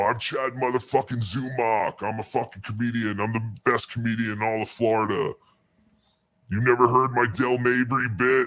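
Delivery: put-on angry yelling. Retelling an argument at a food truck: imitating Chad yelling. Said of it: "Chad is yelling at him".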